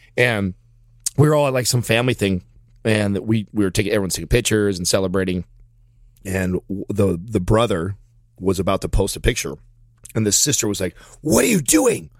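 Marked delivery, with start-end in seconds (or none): 11.2-12.1 play-acted really mad outburst, voice way up high. Retelling a sister stopping her brother from posting a picture: imitating someone angry. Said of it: "really mad at him".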